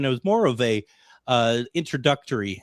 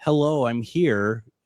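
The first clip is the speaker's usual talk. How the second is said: put-on little girl voice, much slower. Retelling a voice heard from the corner of the room, in a little girl voice. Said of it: "a little girl's voice".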